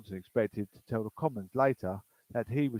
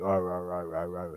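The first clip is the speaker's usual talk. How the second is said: cross, low, slow, angry reading-aloud voice; 4 semitones lower than usual. Recalling teachers reading aloud to kids, imitating an angry teacher reading. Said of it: "he's a bit angry this morning reading that book".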